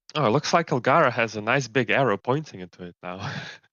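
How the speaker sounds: sardonic, dry, sarcastic, mocking tone. Speaking as a character in a role-play scene, sarcastic. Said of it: "Say sarcastically".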